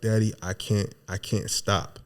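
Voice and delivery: mock crying, very slow and drawn out, tearful. Retelling a child's words to her father: imitating someone crying. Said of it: "and you were crying".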